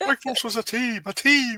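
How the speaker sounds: put-on heavy, thick French accent, very high pitch. Recalling Martel cutting a promo, Rick Martel French accent. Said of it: "a heavy French accent ... I do a horrible Rick Martel impression".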